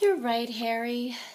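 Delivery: small, shrunken-down voice. Narrator reading Hermione's line in a story, in a small voice. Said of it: "said Hermione in a small voice".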